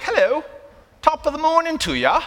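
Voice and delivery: put-on English accent, very high, sing-song and swooping. Demonstrating ways to greet someone, in an english accent. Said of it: "you're English and you go like".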